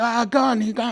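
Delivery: play-acted very high, stretched-out scream. Retelling a street scene with a gun, imitating a man screaming. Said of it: "there's a guy screaming".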